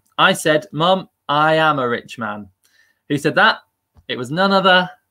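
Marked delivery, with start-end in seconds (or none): none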